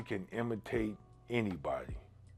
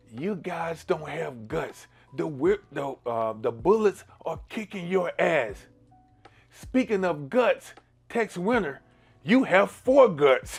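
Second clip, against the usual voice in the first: put-on yelling; 8 semitones higher, 5 dB louder than usual. Retelling what a heckler behind the bench shouted at a coach: imitating a heckler yelling. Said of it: "he yelled".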